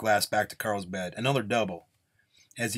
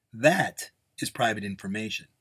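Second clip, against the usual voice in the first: plain reading voice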